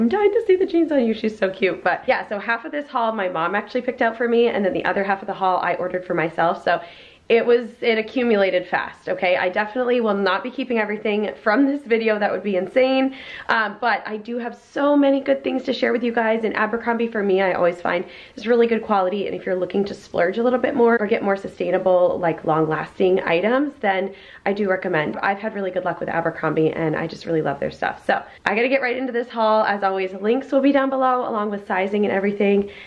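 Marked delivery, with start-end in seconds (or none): 0.0-1.1 squealing high and loud with excitement. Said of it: "she was like".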